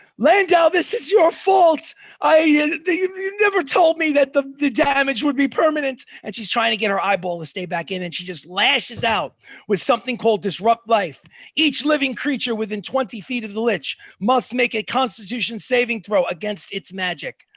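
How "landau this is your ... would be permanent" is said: high-pitched, furious, raging screaming. Voicing a furious lich whose eyeball fell out: furious screaming. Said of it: "she screams at the top of her lungs".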